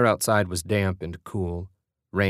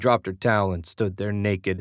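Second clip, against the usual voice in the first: ordinary delivery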